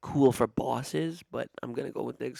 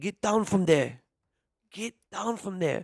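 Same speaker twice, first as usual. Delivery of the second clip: put-on heavy, thickly laid-on Ghanaian accent; 6 semitones higher, 4 dB louder than usual. Retelling what was heard through the apartment wall: imitating a thick Ghanaian accent. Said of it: "I heard the thick accent".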